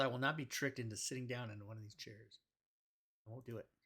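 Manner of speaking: very quiet, barely audible mumble under the breath. A player, in character while a room is described, mutters: mumbling under breath. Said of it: "I mumble under my breath".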